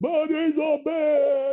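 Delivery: shrill, very high-pitched, loud yell. Speaker recounts a guy yelling out in front of everybody; retelling a loud yell.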